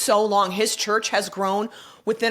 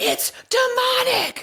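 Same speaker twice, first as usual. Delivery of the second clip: very high, shrill preacher-style yelled outburst. Retelling a man's rant about the church, the speaker imitates him yelling. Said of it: "He literally was yelling it".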